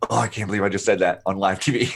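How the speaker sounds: mock voice dripping with cringe, mortified. Voicing a man's thought after his slip on live TV: imitating an embarrassed cringe. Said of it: "you can almost hear the cringe in his, in his vocal tone".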